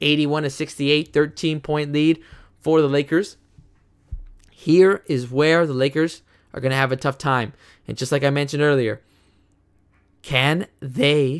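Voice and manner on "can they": voice cracking. Calling a basketball game play by play: voice cracking. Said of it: "as my voice cracks".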